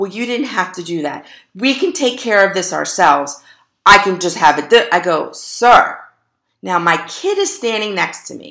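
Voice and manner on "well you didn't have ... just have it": mock raised voice, much faster. Retelling what the man said after the car accident, imitating a raised voice. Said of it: "He's raising his voice".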